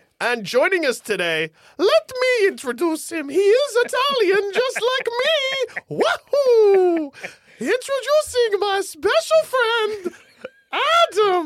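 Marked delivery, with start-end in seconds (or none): 1.8-11.5 very slow, high, sing-song, swooping showman host voice. Introducing a special friend named Adam; Mario voice.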